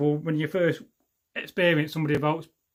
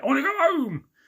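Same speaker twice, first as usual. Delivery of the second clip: put-on shout, much higher pitch, slower pace. Speaker retells how their dad starts shouting it, imitating his shout. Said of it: "he starts shouting it".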